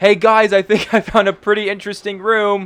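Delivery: loud, very high-pitched shout across a room. Voicing Bond calling the others over to a room: shouting across a room. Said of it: "he shouts over at the side of the room".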